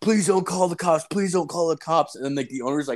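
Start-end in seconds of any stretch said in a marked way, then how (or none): 0.0-2.2 put-on begging, pleading voice, pitched up. Retelling how the kid begged not to be reported: imitating someone begging. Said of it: "begging me".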